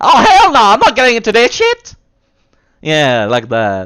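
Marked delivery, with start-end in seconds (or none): 0.0-2.0 squeaky, super high-pitched, loud voice. Acting out a stereotyped game character: put-on super high-pitched voice. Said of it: "the super high-pitched voices".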